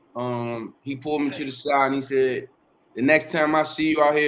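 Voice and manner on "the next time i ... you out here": plain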